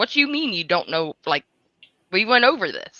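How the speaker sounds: angry voice, losing temper. Retelling what a man said on speakerphone: imitating him getting mad. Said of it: "he started getting mad".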